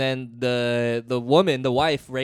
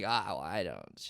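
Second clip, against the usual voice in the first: very hushed, slow mumble under the breath; 7 semitones lower, 12 dB quieter than usual. Retelling how a front-row audience member answered: imitating someone mumbling. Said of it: "He starts, like, mumbling".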